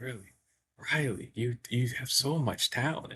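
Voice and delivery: very soft, hushed, gentle voice. Recounting a story, you act out what is said to Riley in a soft Bob Ross voice. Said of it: "Like he's talking so soft".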